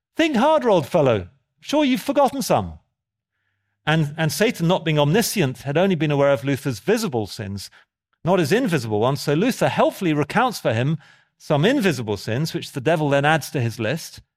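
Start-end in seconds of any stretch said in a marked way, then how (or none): 0.2-2.8 put-on bright, chipper, pitched-up sing-song. Storyteller acting out a man's reply to the devil, retelling a cheerful reply. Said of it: "says cheerfully".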